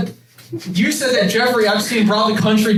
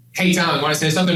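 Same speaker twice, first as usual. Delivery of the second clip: ordinary talk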